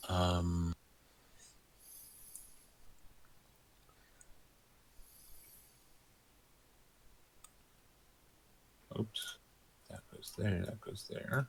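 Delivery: playful whisper. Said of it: "So I'm gonna whisper real quietly right now".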